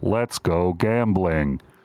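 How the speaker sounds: machine-like robotic voice. Describing what a game's machine says when money goes in: robot voice. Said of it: "a robot voice goes".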